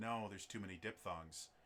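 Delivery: plain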